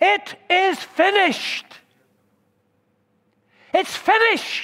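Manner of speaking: high, loud, ringing cry. A speaker delivering today's message quotes Jesus' last words, retelling a loud cry. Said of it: "Permit me to raise my voice".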